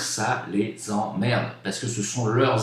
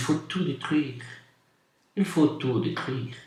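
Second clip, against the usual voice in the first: put-on Belgian accent in French; 4 semitones higher than usual. Saying how even the french put it: belgian accent. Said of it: "le disent avec l'accent belge".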